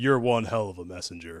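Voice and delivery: deep, quiet gravelly hero voice.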